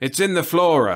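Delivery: firm, insisting tone. Reading a story aloud, voicing a character's claim: insisting. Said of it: "he insisted today".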